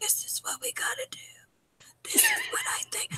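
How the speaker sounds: conspiratorial whisper, barely audible. Imitating someone leaning against a girl and whispering plans: imitating Ross whispering. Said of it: "I can barely hear you".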